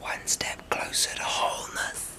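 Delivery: whispered, barely voiced, very quiet. Speaker closing a reflection to listeners, whispering. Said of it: "because I'm whispering".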